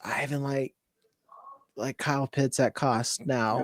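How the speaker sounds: low, very quiet whispered aside. Asked for his view on players, the speaker shares a pick: whispering. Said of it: "I'm gonna whisper this".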